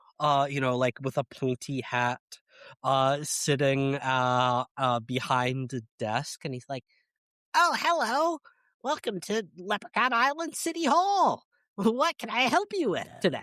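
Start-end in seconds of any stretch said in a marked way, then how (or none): 7.6-13.4 tiny, high-pitched gnome voice. Describing a gnome behind a desk at City Hall, the speaker voices him: little gnome voice. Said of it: "there's just like a little gnome".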